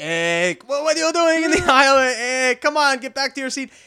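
put-on accent from Israel. Acting out the pilot who came out of the cockpit to yell at you, put-on heavy Israeli accent. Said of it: "he's got like that heavy Israeli accent, which I can try".

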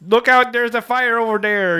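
over-the-top, high, fake Chicago accent. Speaker imitating a TV show character's line: fakest Chicago accent. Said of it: "putting on the fakest Chicago accent".

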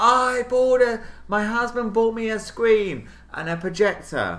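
acted screaming. Telling a story, reenacting answering a woman across an audience, retelling screaming across an audience. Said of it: "I was like screaming across the audience going".

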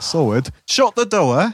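put-on accent from Burnley. Speaker chatting about a Football Factory episode on Burnley, doing a Burnley accent. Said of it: "Burnley and that, where it's like".

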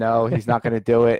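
ordinary talk

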